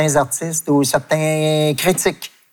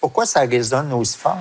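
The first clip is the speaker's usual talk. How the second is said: ordinary talk, nothing marked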